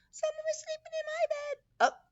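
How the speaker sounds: squeaky, very high little voice. Reading a story aloud, Baby Bear's line in a squeaky Baby Bear voice. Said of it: "with a squeaky voice".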